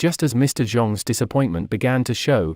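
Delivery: plain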